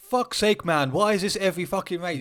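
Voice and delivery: seething, fuming outburst. Retelling a crash in qualifying as Max comes round: imitating Max fuming.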